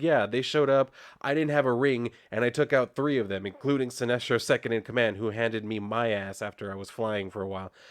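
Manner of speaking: normal talking voice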